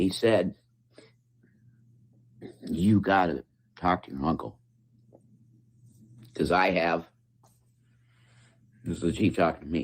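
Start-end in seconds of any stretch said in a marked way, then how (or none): 2.7-4.6 imitated whisper. Retelling what the chief of police said to him: imitating a whisper. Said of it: "he said it in a whisper".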